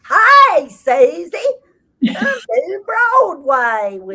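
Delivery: overblown put-on Texas drawl, very high, loud, shrill. Show how she imitates you when retelling what you said, in her version of a texas accent. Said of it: "Her version of my Texas accent is like".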